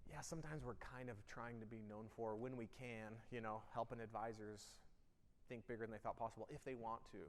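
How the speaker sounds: very quiet, hushed, unsure and timid. Showing an audience the wrong way to state a mission: timid, unsure delivery. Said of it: "Not like".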